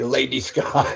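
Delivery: la-di-da, posh, upper-class voice. Showing how the name sounded said in a posh voice. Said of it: "in a posh way".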